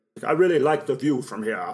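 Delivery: put-on old vampire count character voice. Voicing Dracula about the property: Christopher Lee impression. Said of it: "Why do you sound like Patrick Stewart?".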